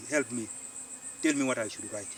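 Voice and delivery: ordinary talk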